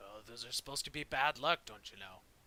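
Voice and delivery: dwarf voice muttering quietly under breath. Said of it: "you hear one of the dwarves mutter under his breath".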